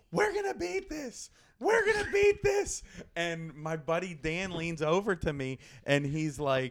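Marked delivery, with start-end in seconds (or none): 0.1-2.8 very high, shrill, loud stage yell. Retelling a speaker on stage rallying a crowd: imitating someone yelling. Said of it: "she's on stage and she's yelling".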